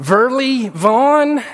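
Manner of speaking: acted, unsure, loud call with a rising ending. Retelling how she called out the speaker's name: retelling a loud, questioning call. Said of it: "she would say it really loud with a question mark".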